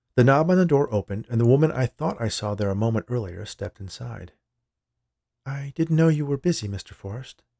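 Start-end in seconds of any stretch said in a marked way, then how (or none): 5.5-7.4 shy, timid, slightly high voice. A woman stepping inside tells the man she didn't know he was busy, timidly. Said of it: "she said timidly".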